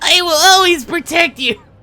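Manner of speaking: pitched way up, cartoon-like. Repeating a game line after mocking it: imitating Chip's Ralsei-sounding voice. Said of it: "a fucking Ralsei sounding voice".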